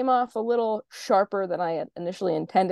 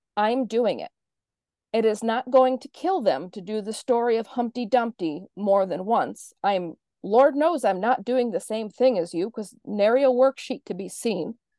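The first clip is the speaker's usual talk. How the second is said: acted, heated, angry, defiant comeback; 2 semitones higher than usual. Retelling own reply to a coworker's objection: retelling own angry reply. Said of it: "I was so angry".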